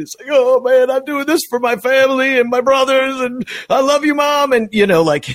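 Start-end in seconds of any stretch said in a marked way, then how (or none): 0.3-4.5 acted, weepy, tearful, high-pitched crying speech. Imitating a player's All-Star speech, Wilson Contreras crying. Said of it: "Wilson Contreras will be up there crying".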